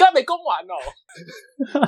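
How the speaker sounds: mock abrupt shout, very high and drawn out. Acting out a dad yelling down the other phone line during a call: retelling a sudden shout. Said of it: "他们就会在电话那头突然大吼说".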